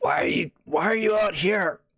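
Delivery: scratchy diminutive voice. Voicing a figure who questions a player: scratchy, diminutive voice. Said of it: "Kind of a scratchy, diminutive sounding voice".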